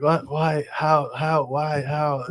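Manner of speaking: mock, slow, groggy, barely roused half-asleep voice. Retelling a phone call to a friend, imitating a half-asleep friend. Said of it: "half asleep".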